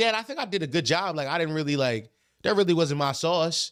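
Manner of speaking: ordinary talk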